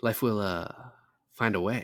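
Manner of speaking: halting delivery with a pause mid-sentence. Pushed by the other speaker to try: Jeff Goldblum impression with pauses. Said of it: "I can just pause in the middle".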